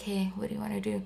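soft-spoken cozy voice. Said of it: "He talks really softly like this".

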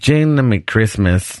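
put-on comic Mexican accent. Quoting what she said to him, in a Nacho Libre voice. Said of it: "Why do I make everybody sound like Nacho Libre?".

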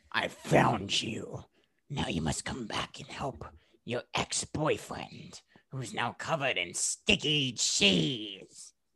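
whispered, drawn-out, slow, breathy cartoon delivery. Summing up a movie plot, doing a Tipo impression. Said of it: "That was my impression of Tipo".

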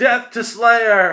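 high battle cry at full volume. Voicing one of the enemies in the fight: yelling a battle cry.

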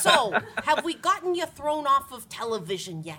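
high, slow put-on old woman voice with Long Island accent. Retelling what Stan Lee always says, doing a Stan Lee impression. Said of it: "You sound like somebody's grandmother from Long Island".

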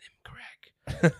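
whispered voice full of craving. Acting out the inner voice of a drug addict: imitating an addict's inner voice. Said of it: "so eine Stimme, die, wenn du so drogenabhängig bist, die sagt".

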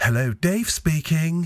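put-on posh telephone voice. Retelling how a man answered the phone, the speaker does a Hyacinth Bouquet telephone voice. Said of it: "he had this telephone voice that was completely different".

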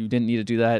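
furious, reproachful, angry, pissed-off tone. Retelling a film scene, quoting the character's reaction: imitating an angry character. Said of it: "she was totally pissed off".

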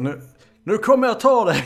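shouting in a put-on character voice. Playing a frightened character challenging whatever creeps in the house: shouting in character. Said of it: "och jag skriker".

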